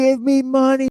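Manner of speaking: very high, shrill, loud shouted cult-leader yell. Retelling how a host yells at viewers for money: imitating someone yelling. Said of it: "he's yelling at people".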